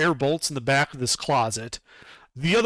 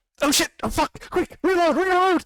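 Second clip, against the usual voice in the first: frantic, panicking goblin voice, higher; 3 dB louder than usual. Voicing a panicking goblin after a missed ballista shot: panicking goblin voice. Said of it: "goblin say".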